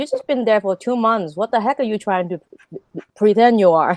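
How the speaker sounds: plain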